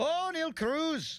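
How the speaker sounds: clumsy put-on Irish accent, very high. Reading out a texter's note on a player's Irish-looking name: bad Irish accent. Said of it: "That was bad, bad accent".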